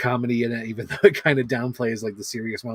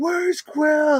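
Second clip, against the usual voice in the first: put-on top-of-the-lungs shout, very high, all-out. Retelling a movie scene where Drax yells: imitating Drax yelling. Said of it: "Drax is yelling at the top of his lungs".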